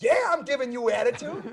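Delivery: very loud, high shouted voice. Retelling a standoff with a man over directing traffic, retelling own shout. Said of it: "I shout back".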